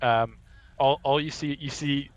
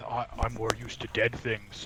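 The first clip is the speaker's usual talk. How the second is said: muttered, much quieter and slower; 7 dB quieter than usual. Player voices Delgado, kneeling beside someone hurt, muttering under his breath. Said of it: "mutter under his breath".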